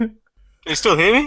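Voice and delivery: very high, muffled voice as if behind a mask. Checking the other speaker can still hear them, sounding like someone in a War Machine mask. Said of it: "you sound like um, someone in a War Machine mask".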